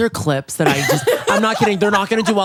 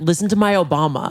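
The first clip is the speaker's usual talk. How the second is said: ordinary talk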